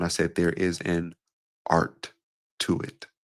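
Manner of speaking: deliberately slow speech. Speaker demonstrating pacing by repeating a phrase, slowed down. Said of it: "I just slowed down".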